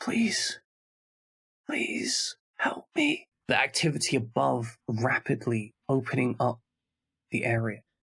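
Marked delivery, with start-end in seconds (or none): 0.0-3.3 faint, gentle, quiet, barely audible pleading voice. A gentle voice calls up from somewhere beneath the party: quiet, barely audible plea. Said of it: "this gentle voice again sounding beneath them somewhere, quiet, barely audible".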